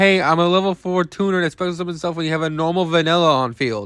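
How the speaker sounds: ordinary talk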